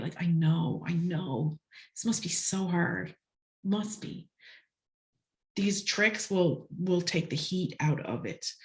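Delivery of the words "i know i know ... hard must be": deeply sympathetic, soothing, calming, empathy-filled voice. Demonstrating how to co-regulate with a kid through voice and words: empathy-filled voice. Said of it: "with this very empathy filled".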